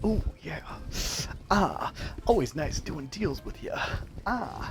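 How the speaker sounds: hushed, breathy, sighing, whispered character voice. Voicing a character who claws a bush after a deal: voicing Trevor, a character. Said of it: "he's just clawing it, like".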